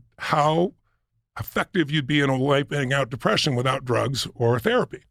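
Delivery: normal talking voice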